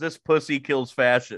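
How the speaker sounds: ordinary talk, nothing marked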